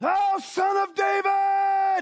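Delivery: very loud, very high bellowing shout, drawn out. Retelling what a man in the crowd called out to be picked out, retelling a bellowing shout. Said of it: "He bellowed out".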